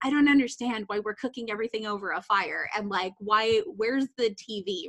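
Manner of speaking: usual speaking voice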